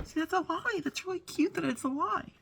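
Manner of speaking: very high, tearful voice, weeping through the words. Reacting while hearing the story of how it happened, crying. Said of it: "Sorry, I'm crying".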